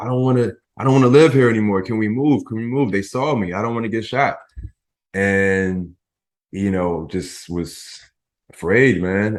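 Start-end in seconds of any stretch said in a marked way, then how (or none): 0.0-4.4 acted tearful crying, desperate pleading tone. Retelling calling his mom after being seen, imitating his own crying plea. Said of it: "I called my mom crying".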